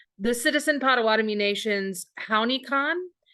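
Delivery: ordinary talk, nothing marked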